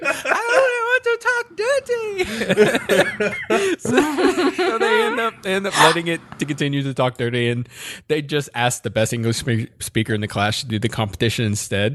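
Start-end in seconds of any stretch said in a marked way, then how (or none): 0.0-3.2 very high-pitched, slow, creepy robotic voice. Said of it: "saying it only wants to talk dirty".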